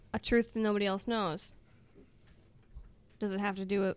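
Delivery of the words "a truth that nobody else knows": usual speaking voice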